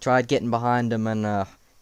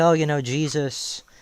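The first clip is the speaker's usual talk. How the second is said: ordinary talk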